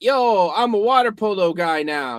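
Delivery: slow, drawn-out, mocking sports-host announcer voice. Mocking how Pat McCaffrey talks about his career: imitating Pat McCaffrey. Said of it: "he'd be like".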